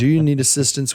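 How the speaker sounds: plain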